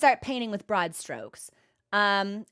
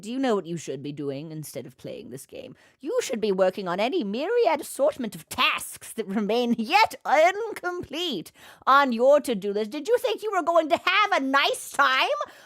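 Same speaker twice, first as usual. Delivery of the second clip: sinister, menacing, taunting evil wizard voice. Describing how their brain talks to them while gaming, the speaker does an evil wizard voice. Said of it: "talk like an evil wizard".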